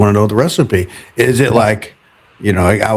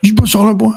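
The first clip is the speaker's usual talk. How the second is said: put-on drill sergeant voice, higher; 10 semitones higher than usual. Retelling how a trainer scolded about salt: imitating Phil like a drill sergeant. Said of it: "he was like a drill sergeant".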